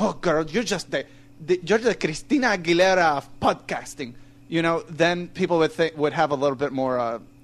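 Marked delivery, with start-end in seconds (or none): 0.0-4.1 put-on Spanish-speaking accent.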